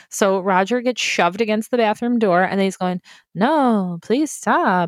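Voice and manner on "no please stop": acted, insincere tone dripping with sarcasm. Retelling what a guy said when shoved against the bathroom door, mock-sarcastic plea. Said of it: "in the sarcastic voice".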